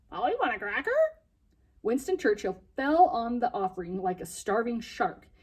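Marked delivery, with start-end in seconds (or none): 0.1-0.9 squawked like a parrot, squawky voice. Benji holds a cracker through the bars to a parrot, in a squawky parrot imitation. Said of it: "In his best imitation of what he thought a parrot should sound like, he squawked".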